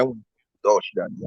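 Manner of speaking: hushed, soft whisper right into the ear. Retelling what they say when drunk on Henny: imitating own whisper. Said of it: "just by just whispering on the ear".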